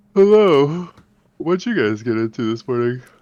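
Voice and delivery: sleepy, groggy, half-awake voice through a yawn. Playing a character strolling over to greet the group, groggy and yawning. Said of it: "kind of groggily, kind of yawning".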